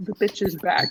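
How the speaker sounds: hushed mutter under the breath. Speaking in character as a familiar tiefling sits down: muttering under breath. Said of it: "I'm gonna say under my breath".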